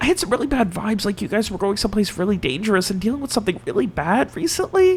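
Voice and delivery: cautious whispering. Voicing a character leaning in close to a friend: whispering carefully. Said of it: "kind of whispers carefully".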